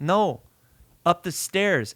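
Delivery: slow, mock curt, dismissive, brushing-off tone. Retelling what a chef said when asked about an elevator: imitating the chef's dismissive tone. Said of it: "he fucking said it in this tone".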